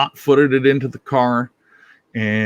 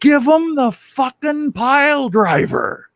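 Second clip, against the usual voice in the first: very high, shrill, sudden shouted outburst; 14 semitones higher than usual. Retelling a quiet moment at a wrestling show when a sales manager yelled out: imitating someone yelling. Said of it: "he yells out".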